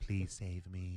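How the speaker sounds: put-on desperate pleading. Imagining what a silent co-host says to the camera: imitating a hostage pleading for help. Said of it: "he's probably looking in the camera who's saying".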